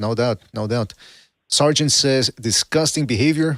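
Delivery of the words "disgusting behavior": plain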